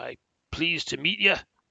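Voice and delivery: put-on Scottish-accented voice. Voicing the dwarf ambassador greeting the players, in Conrad Brawnanvil's Scottish accent. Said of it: "because he's got the Scottish accent".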